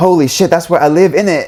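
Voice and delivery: put-on, clumsy British accent. Imitating British readers reacting to a book title, bad British accent. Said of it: "We have to do the accent".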